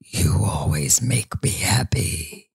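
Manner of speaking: voice of a talking teddy bear. Quoting a toy bear while discussing a scary film: teddy bear voice. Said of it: "Why did the bear talk like that".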